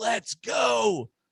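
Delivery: high-pitched, excited shout. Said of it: "I was like".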